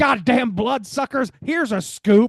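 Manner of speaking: put-on angry shouting. Speaker reading out a film character's quote, retelling an angry outburst. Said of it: "He's just angrily, angrily saying things".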